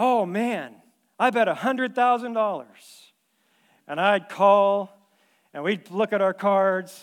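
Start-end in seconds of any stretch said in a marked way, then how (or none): 0.0-2.7 mock-exaggerated, played-up delivery, higher and slower. Retelling a card game opponent's bet, acting out a played-up bet. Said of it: "He'd play it up".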